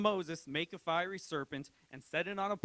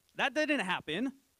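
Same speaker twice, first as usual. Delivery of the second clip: ordinary talk, nothing marked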